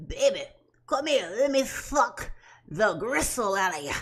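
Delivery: put-on old man with no teeth. The speaker mocks how a man's words sound: toothless old man voice. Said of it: "Sound like an old man with no teeth".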